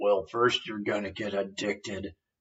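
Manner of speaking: low, rough, gravelly rasp. Retelling a masked movie character's anti-tobacco warning: imitating a gravelly voice. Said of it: "he's got this gravelly voice".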